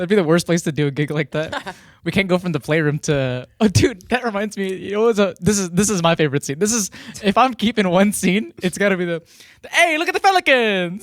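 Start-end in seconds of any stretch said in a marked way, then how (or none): 9.7-11.0 very high-pitched, bad, fake Italian accent. Quoting his favorite movie scene to the others, in a bad Italian accent. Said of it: "I'm doing a bad Italian accent".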